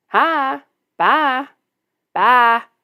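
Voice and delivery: southern drawl with sheep-like bleating vowels. Demonstrating a southern way of saying hi and bye, southern drawl. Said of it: "my southern saying... Sounds like a sheep".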